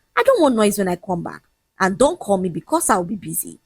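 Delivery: ordinary delivery, nothing marked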